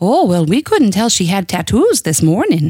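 put-on Minnesotan accent. Retelling what an elderly woman in the church said to the major, attempt a Minnesotan accent. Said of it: "she said in a Minnesotan accent, which I will now attempt".

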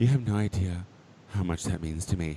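low, dead-serious, completely earnest delivery. Retelling what a baby queen said after a compliment: imitating someone dead serious. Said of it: "serious as hell".

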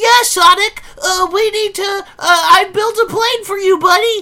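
voice pushed way up high. Doing an impression of Tails talking to Sonic: Tails impression. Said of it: "this is Tails".

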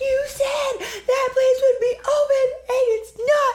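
mock frantic hysterics, very high-pitched. Speaker retells the message she left her vet about her ill dog, retelling a hysterical message. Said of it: "I'm hysterical".

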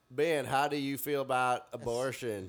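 laid-on Southern accent, Arkansas style. Warming up Southern accents with the group, asking someone a question, Mike Huckabee Arkansas accent. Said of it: "I'll be like a Mike Huckabee, like Arkansas".

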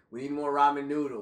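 ordinary delivery

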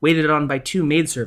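ordinary delivery

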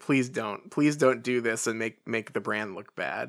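ordinary talk, nothing marked

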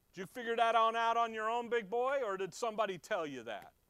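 very loud, high-pitched, mocking sarcastic taunt. Paraphrasing a reply to Pilate in a retold scene: imitating a sarcastic jab. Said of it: "I love the sarcasm".

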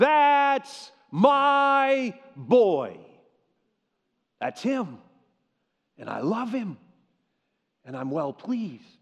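put-on proud cheering cry with drawn-out my. Telling of Jesus's baptism, the speaker acts out the heavenly Father, retelling a cheering shout. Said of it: "And he shouts out".

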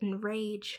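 plain reading voice

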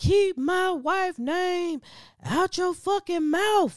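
very high-pitched, drawn-out outburst. Retelling what Will Smith blurted out from his seat: imitating Will Smith blurting out. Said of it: "he just blurted out".

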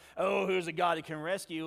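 sarcastic, mocking taunting tone. Showing how the king's question would sound as a poke: imitating a sarcastic jab. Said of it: "He's not being sarcastic".

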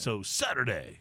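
hyped-up monster truck announcer voice. Announcing the day of an event, monster truck announcer voice. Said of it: "keep using like the monster truck voice".

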